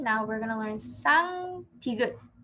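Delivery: plain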